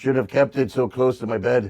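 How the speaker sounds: put-on pirate voice. Acting out what a burned man said, in a pirate voice. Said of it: "I don't know why I sounded like a pirate".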